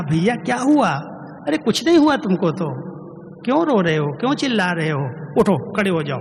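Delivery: play-acted tender, caring, loving, quick delivery. Retelling what an elder said to people crying on the ground, very loving. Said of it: "इतना प्यार से कहा".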